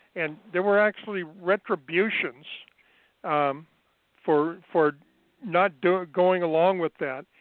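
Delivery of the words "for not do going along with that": ordinary talk, nothing marked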